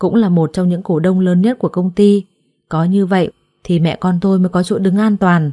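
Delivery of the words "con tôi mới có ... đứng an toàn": ordinary delivery, nothing marked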